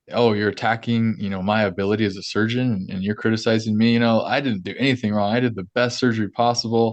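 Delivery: ordinary talk, nothing marked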